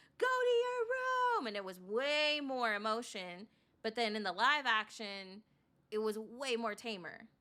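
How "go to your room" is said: very high, loud, furious angry shouting. Comparing film versions, imitating the sister yelling in Lilo and Stitch. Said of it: "where they're yelling at each other".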